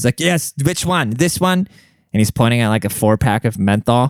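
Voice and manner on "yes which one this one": pushy, combative, high, aggressive yell. Retelling an argument with a man over a device, imitating him yelling. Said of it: "when he starts yelling at me".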